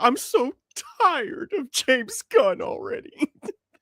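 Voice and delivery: very high, slow, teary voice on the verge of crying. The speaker repeats another man's remark in a mock-crying voice. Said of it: "sound like he's about to cry?".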